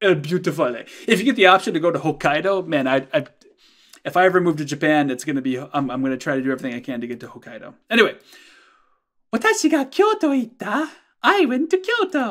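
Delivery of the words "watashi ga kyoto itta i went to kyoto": put-on girl's voice, much higher and slower. Speaker reading a Japanese sentence and its translation, in a girl's voice. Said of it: "I don't know why I'm doing a girl's voice".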